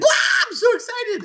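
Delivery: overexcited, very high, frantic squeal. Retelling how Link reacts to getting a heart piece: imitating Link spazzing out. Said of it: "when you get a heart piece and he just spazzes out, he's like".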